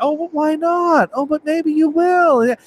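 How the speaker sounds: very high, slow, hopeful coaxing voice.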